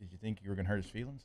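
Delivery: very soft, quiet, gentle, soft-spoken voice. The speaker retells how someone questioned them after a mistake, imitating his soft-spoken tone. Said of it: "he was just like very soft spoken about it".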